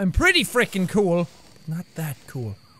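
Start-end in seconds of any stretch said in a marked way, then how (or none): 1.8-2.6 barely audible, very soft, low murmur. Streamer mid-game, commenting to viewers, softly.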